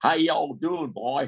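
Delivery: put-on man's Texas accent. Retelling a big Texan man passing a young boy on the beach, in a Texas accent. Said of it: "in his Texas accent".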